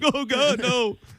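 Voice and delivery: tearful, blubbering, high sobbing wail. Retelling a movie ending where the kid is crying: imitating a kid sobbing.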